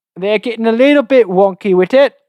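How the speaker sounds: terrible fake British accent, high. Podcast host joking about a cable design, in a terrible British accent. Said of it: "our terrible British accents".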